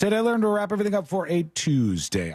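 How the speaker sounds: natural, unslowed delivery. Announcing the day's segment title, talking too fast. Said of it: "I can't slow that down".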